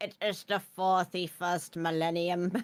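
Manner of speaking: put-on typical old crone narrator voice. Imitating the funny-sounding narrator woman's voice. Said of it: "the voice of that woman is so funny".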